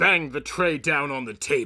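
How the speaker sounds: ordinary delivery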